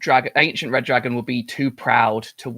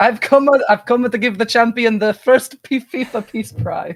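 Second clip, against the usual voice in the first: bold put-on Italian man voice, higher pitch; 10 semitones higher, 4 dB louder than usual. Turning into a character in a campaign game: bold italian man voice. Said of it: "turn into like a bold Italian man".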